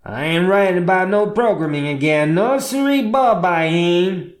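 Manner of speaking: put-on cowboy accent, rushed and rattled off. Speaker retells muttering to themself after something made them sad; muttering in cowboy accent. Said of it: "in my best cowboy accent".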